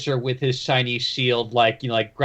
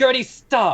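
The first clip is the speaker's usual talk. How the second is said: very high, loud, commanding yell; 12 semitones higher, 4 dB louder than usual. Voicing a character who shouts across the fight to stop a creature: shouting a command. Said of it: "Rainey shouts from the other side".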